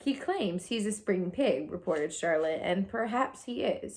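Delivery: ordinary delivery, nothing marked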